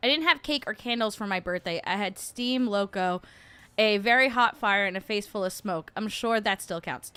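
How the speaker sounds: usual speaking voice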